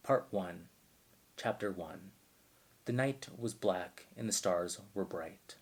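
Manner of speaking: slow, soft audiobook narrator read. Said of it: "audiobook narrator voice is always like".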